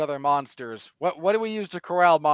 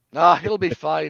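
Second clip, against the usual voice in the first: put-on Scottish accent, spoken much louder; 4 dB louder than usual. Retelling what she said back to Wizard Shazam, in her Scottish accent. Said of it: "In her Scottish accent".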